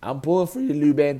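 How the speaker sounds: voice cracking while speaking. Commentator cheering on luban in a matchup, voice cracking. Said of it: "my voice is cracking like a 15-year-old".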